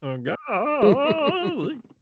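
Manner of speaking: very high, squeaky exclamation. Joking about casting Obi-Wan Kenobi, in a Gomer Pyle voice. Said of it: "Gomer Pyle starring as Obi-Wan Kenobi".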